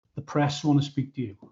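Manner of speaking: put-on flat, deadpan tone. Retelling how a man told him the press wanted him, mimicking a deadpan delivery. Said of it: "he just looked at me with a deadpan".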